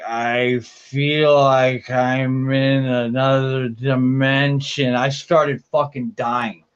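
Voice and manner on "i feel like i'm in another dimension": put-on dazed, zombie-like speech. Speaker retelling their mom walking through their room, imitating a zombie-like mom. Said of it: "walking all slow like a zombie".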